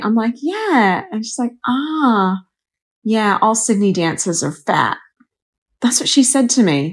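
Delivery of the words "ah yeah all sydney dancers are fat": bad put-on American accent, slow, drawn-out ah. Retelling what a woman said to her twenty years ago, terrible American accent. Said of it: "I'm doing a terrible American accent".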